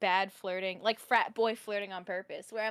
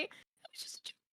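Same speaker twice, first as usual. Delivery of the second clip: very quiet, tiny, whispered little voice; 14 dB quieter than usual. Retelling the aside to listening strangers: imitating own tiny voice. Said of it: "little tiny voice".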